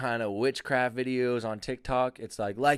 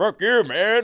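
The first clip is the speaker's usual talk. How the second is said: loud put-on demon voice, pitched up; 7 semitones higher, 7 dB louder than usual. Reworking the bit, act out the demon's retort in a demon voice. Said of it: "that's a better demon voice".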